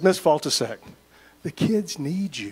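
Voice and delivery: most pitiful, pathetic, pleading begging tone. A principal retells walking up to a staff member to win her back, retelling a pathetic plea. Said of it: "in my most pathetic voice".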